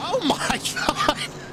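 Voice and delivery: high-pitched voice laughing in disbelief.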